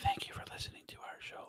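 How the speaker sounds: hushed, very quiet, breathy, barely-there whisper. Imitating the other speaker's show sign-off: imitating someone speaking really quietly. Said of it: "really qu-, quiet".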